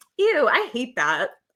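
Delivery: ordinary delivery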